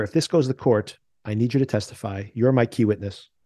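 normal talking voice

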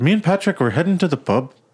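put-on Irish accent with rising, question-like lilt at end. Showing how an Irish accent makes statements sound like questions: Irish accent rising like a question. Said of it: "Irish accent as they're always asking a question".

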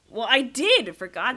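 loud, heated, shouting yell. Bickering over a fun fact, yelling. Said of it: "Why are you yelling?".

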